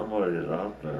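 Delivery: plain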